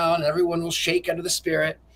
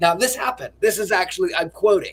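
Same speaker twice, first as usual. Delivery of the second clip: ordinary delivery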